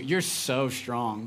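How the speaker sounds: put-on adoring, doting, admiring inflection. Retelling a little daughter's praise after lifting a grocery bag: imitating daughter's admiring inflection. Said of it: "she says it with that ins-, uh, inflection too".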